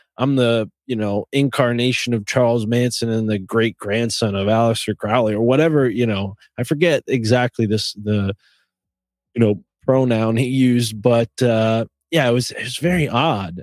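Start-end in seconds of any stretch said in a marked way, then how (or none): none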